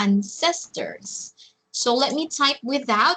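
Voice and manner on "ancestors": ancestors, second syllable ces stressed. Teacher confirming the pronunciation of ancestors: stress on second syllable ces. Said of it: "the stress is on the second syllable".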